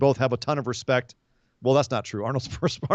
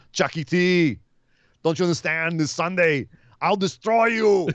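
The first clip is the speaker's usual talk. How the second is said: put-on Bulgarian accent, pitched high; 5 semitones higher than usual. Comparing wrestlers' voices, speaker acts out a promo line: Miro impression, Bulgarian accent. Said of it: "Miro's got a Bulgarian accent".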